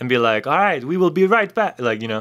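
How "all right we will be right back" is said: high-pitched Eastern European accent, DJ style. Suggesting a way to send the podcast to an ad break: Eastern European EDM guy voice. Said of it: "an Eastern European, like, E D M guy".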